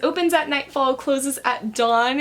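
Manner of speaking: ordinary talk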